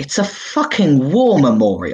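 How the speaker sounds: deeply offended, indignant tone with swooping pitch. A voice from the back of the corridor objects, very offended. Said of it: "very offended".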